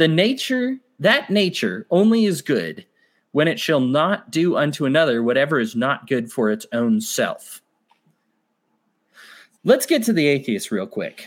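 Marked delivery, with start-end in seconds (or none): none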